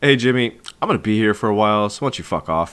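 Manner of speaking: casual, nonchalant, offhand tone. Retelling a character telling Jimmy to leave: imitating a nonchalant tone. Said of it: "nonchalantly is like".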